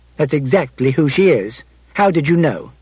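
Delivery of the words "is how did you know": ordinary delivery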